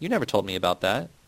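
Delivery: ordinary delivery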